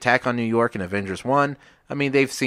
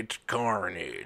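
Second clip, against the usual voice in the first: mock rural villain voice; 2 semitones lower, 9 dB quieter than usual. Retelling a movie villain's line as Woody Harrelson: imitating Woody Harrelson as Cletus. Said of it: "he says some dumb shit like".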